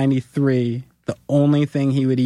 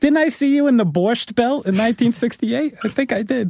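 put-on old lady voice, much higher; 10 semitones higher than usual.

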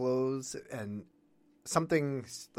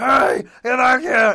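shrill, high, very loud shout; 12 semitones higher, 16 dB louder than usual. Retelling how a film character yells at her to run back: imitating someone yelling. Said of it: "But yelling at her to run back to him".

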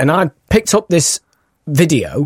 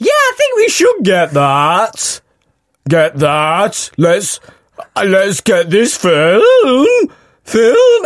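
high voice cracking mid-sentence, drawn out and stretched; 6 semitones higher than usual. Retelling a film rental as a boy, imitating his own breaking voice. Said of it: "what's happening to your voice?".

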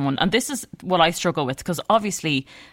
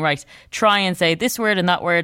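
ordinary talk, nothing marked

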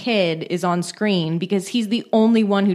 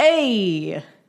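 put-on New York accent. Imitating a servant character on a TV show, in a New York accent. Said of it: "the New York accent".

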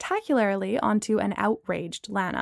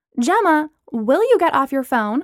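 reproachful, reproving, higher pitch; 4 semitones higher, 4 dB louder than usual. Lana speaks to gemma about being on her phone: reproachful. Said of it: "Lana said reproachfully".

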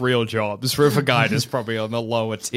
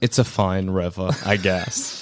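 put-on bored tour-guide monotone, lower pitch; 6 semitones lower than usual. Imagining a tired tour guide with no tips: mock monotone tour guide. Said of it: "just gonna talk in a monotone voice".

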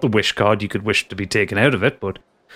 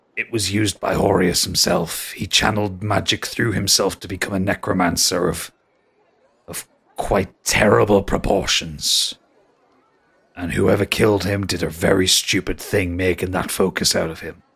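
grave, somber voice with anger drained away; 3 semitones lower than usual. Game master voicing Grizz answering the players' question about the Heart of Horus, somber. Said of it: "He actually gets really somber".

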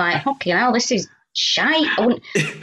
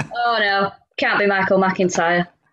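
slow, glum, beaten-down, resigned mope. Mocking an audience's doubtful reaction, imitating a downtrodden attitude. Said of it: "what is the downtrodden attitude there?".

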